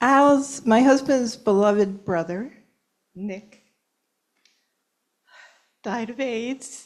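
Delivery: tearful, on the verge of tears. Sharing a remembrance of a loved one in front of a group: on the verge of tears. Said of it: "I'm going to cry".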